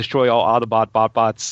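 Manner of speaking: plain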